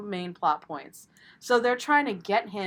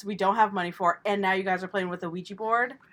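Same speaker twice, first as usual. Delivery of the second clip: usual speaking voice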